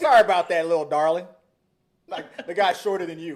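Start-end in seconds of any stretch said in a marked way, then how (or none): 0.0-1.3 put-on loud, patronizing, condescending sweet-talk in Texan accent. Acting out a Texas driver apologizing: imitating a condescending Texas driver. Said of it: "They'll do it in a misogynistic way".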